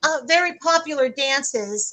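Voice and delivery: ordinary delivery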